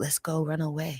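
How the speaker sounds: hushed, slow, soft, close half-whisper. Retelling half-whispering into someone's ear: retelling a half-whisper. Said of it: "and I whisper in his ear".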